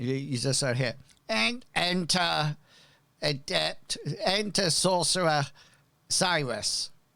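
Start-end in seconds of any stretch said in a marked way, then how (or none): 1.3-6.9 put-on ancient, very old, wizened calling voice. Narrator voicing someone who calls the players' characters inside, a very old wizened shout. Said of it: "shouts in a very old wizened voice".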